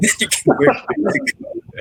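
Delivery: high, breathy laughing through the words.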